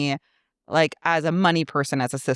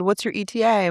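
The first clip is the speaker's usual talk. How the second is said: usual speaking voice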